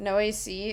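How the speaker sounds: usual speaking voice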